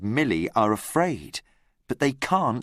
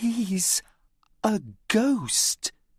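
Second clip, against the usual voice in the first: light read-aloud voice, pitched up; 8 semitones higher than usual. Reading a story aloud, a girl tells Tom about a ghost: quiet voice. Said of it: "she says in a quiet voice".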